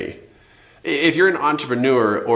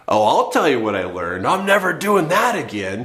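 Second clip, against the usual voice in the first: a little sarcastic, dry, laid-on put-on sarcasm; 3 semitones higher than usual. Showing how one might first answer what was learned: sarcastic tone, put on. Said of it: "you might be a little sarcastic".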